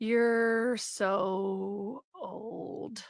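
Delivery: put-on drunken whisper. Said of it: "start whispering, like, boozy, stupid, yammering".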